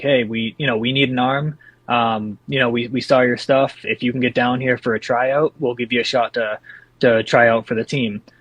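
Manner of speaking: plain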